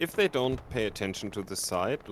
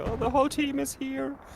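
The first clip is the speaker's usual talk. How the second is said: very high-pitched screaming. Retelling a moment in defense when enemies rushed in: retelling a scream. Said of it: "I was screaming like".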